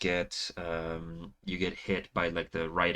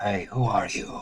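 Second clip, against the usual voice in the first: strange spectral voice; 2 semitones higher, 6 dB louder than usual. Voicing a ghost that calls out to the players: strange spectral voice. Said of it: "a strange spectral voice".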